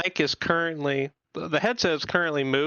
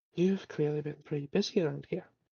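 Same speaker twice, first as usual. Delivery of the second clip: put-on faint, subtle, soft, purring Irish accent; 6 dB quieter than usual. A player voices their character in the scene, in a soft, subtle Irish purring accent. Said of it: "very soft, very subtly Irish purring accent".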